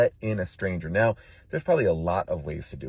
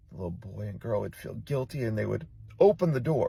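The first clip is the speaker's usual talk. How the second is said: ordinary delivery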